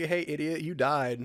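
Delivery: ordinary delivery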